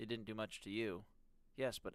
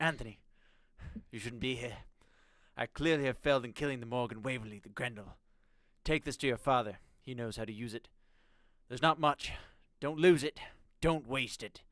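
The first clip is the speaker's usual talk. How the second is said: put-on British accent, louder; 10 dB louder than usual. Reading a note aloud after being asked to: Gordon Ramsay voice. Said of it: "Gordon Ramsay".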